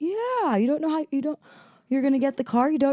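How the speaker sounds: very high-pitched put-on Brazilian accent. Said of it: "He has complete accent".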